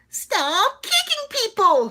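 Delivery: character voice pushed very high and loud. Voicing a season one line as Paper sounded back then. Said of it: "that's how paper sounded back then".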